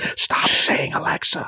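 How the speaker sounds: slow, hushed, pleading whisper.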